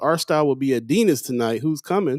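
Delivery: ordinary delivery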